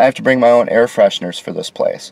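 plain

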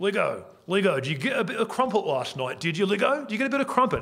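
taunting Cockney accent, high and rising.

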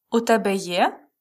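pitch climbing on the final є. Explaining how the phrase becomes a question: pitch rising at the end on є. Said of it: "with a question intonation, rising intonation, means do you have?".

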